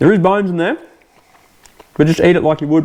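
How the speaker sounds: speaking with a mouthful. Speaker tasting fish wings while explaining how to eat them, talking with mouth full. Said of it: "sorry, talking with mouthful".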